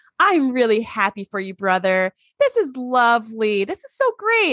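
forced, over-bright, fake cheerful, sing-song tone. Retelling Lore congratulating his brother Data: imitating Lore's fake smile. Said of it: "puts this big fake smile on and goes".

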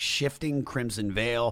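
ordinary talk, nothing marked

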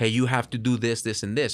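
ordinary talk

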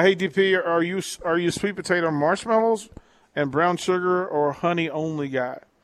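ordinary talk

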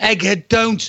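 urgent, restrained shout, held back. Retelling a ghost-hunt stitch-up, warning a friend off: retelling a shout. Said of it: "and I'm shouting".

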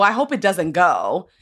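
put-on teasing, joking, friendly tone. Retelling a friend teasing about a pilot: imitating Justin in a joking friendly way. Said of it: "in, like, a joking friend way".

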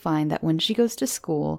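ordinary delivery

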